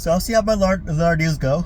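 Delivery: high, stretched words spoken through a yawn. Speaker apologizes for yawning while still talking; yawning. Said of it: "yawning here".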